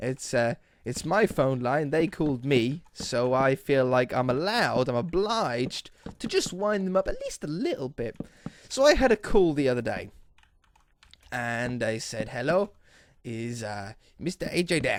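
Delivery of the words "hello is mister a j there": put-on Indian accent. Retelling a phone call from a caller: Indian accent. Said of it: "I'm doing an Indian accent".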